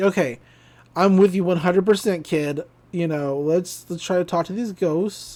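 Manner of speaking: plain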